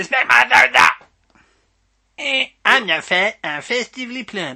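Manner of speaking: put-on cartoonish child voice. Doing a party piece of remembered lines, a Cartman impression. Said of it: "my party piece doing a Cartman".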